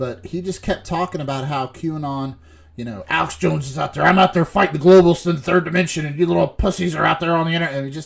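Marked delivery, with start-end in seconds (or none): 3.1-7.7 very loud, high-pitched ranting at full blast. Retelling a radio host's meltdown at critics: Alex Jones impression. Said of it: "a very good impression of him".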